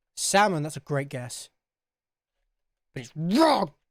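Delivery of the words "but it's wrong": hard, aggressive, forceful, combative outburst. Guessing colour names aloud and rejecting a guess: aggressive. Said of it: "that was aggressive".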